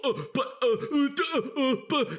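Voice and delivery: very high, derisive, taunting, stammering "uh-uh" babble. Imitating boomers stammering after an error, mocking them. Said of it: "it's fun to mock them".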